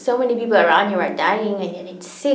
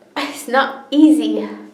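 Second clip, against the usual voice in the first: "not easy" said slowly and louder, stressed.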